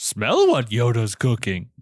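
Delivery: bad, sloppy character voice with swooping pitch. Asked for a Rock line in Yoda talk: not very good Yoda voice. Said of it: "It's not a very good Yoda".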